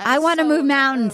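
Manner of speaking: usual speaking voice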